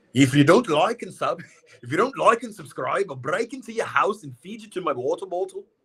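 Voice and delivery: attempted Scottish accent, very high. Trying out different accents for viewers, still working on it: attempted Scottish accent. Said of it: "What's the Scottish version of that?".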